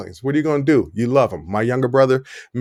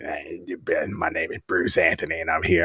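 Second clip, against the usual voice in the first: put-on croaky voice, much lower and quieter; 8 semitones lower, 6 dB quieter than usual. Imitating how he sounds on recordings, speaker uses a mock croaky voice. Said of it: "frog in my voice".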